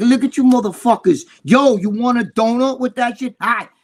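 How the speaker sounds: put-on wise-ass taunting tone. Retelling how a young guy taunted men on a coffee break in a bodega, imitating a cocky taunt. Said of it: "acting all cocky and shit".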